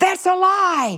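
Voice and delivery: shouted out, very high yelling. A woman recalls yelling from the back at a speaker addressing kids: yelling out. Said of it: "I yelled out".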